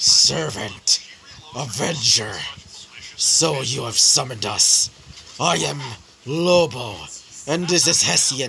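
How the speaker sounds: slow, drawn-out, guttural wolf voice from the throat. Narrating the summoning, voice the wolf's words in a guttural Lobo voice. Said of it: "The wolf would speak with a almost guttural tone".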